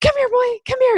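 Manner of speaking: very high, quick, fast calling voice. Speaker demonstrates how people sound when calling a dog; high-pitched, fast dog calling. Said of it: "this high pitch, this like fast pace".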